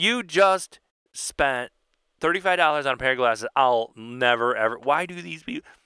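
normal talking voice

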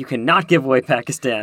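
stern, severe, strict official-sounding tone. Retelling a conference organizer's warning to the delegates: imitating a stern voice. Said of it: "very sternly was like".

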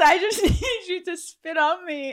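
high voice, laughing throughout.

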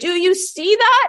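crying, high-pitched voice. Retelling a man in a helicopter asking the co-pilot: imitating Walt Disney crying. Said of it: "he turned to the co-pilot crying".

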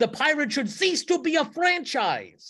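high-pitched, top-of-the-lungs screaming rant. Retelling a radio rant after a baseball trade, imitating someone screaming. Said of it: "was screaming at the top of his lungs".

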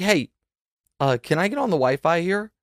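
very quiet, hushed, low-key murmur. Retelling someone asking others for the Wi-Fi: imitating Demonte speaking very quietly. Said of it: "very quietly to".

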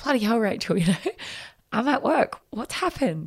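high, giggling, laughing while talking. Retelling her mum's reply on the phone from work: imitating her mum giggling. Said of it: "And she's having a giggle".

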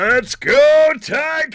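pumped-up, high, loud stadium announcer call. Showing the in-stadium pa voice for the ticats home games: stadium pa announcer call. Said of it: "the P A voice, the stadium, in-stadium voice".

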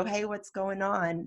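soft, gentle delivery. A dad retells asking an uncomfortable other dad what's going on: retelling a gentle question. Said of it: "I gently asked".

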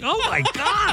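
incredulous laughter in voice.

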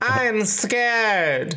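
weird, unsettling, high, eerie horror-movie voice. Retelling what a scared girl said to the speaker, imitating a creepy, weird voice. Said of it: "really weird, like Children of the Corn shit".

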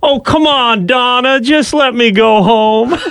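mock very high, drawn-out, slow drunken begging. Retelling a drunk man on the ground being handcuffed by an officer he knows: imitating a drunk man pleading. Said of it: "He's all drunk and disheveled. He's like".

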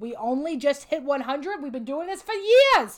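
loud, put-on old woman voice, New York accent. A podcast host reacts to their 100th episode: old New York woman voice. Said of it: "you turn into a New York, old New York woman".

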